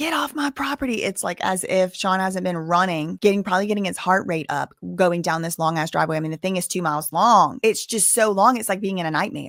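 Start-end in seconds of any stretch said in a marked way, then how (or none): 0.0-1.0 play-acted, high-pitched screaming. Mimicking a man ordering someone off his property: imitating someone screaming. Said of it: "The way he's screaming".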